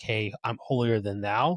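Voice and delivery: ordinary talk, nothing marked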